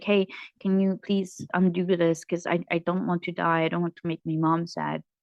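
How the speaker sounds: put-on shaking, tearful, pleading voice. Speaker acting out their past self begging them: retelling tearful begging. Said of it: "I was like begging them, crying and shaking".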